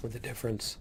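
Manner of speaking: soft, weak voice giving out.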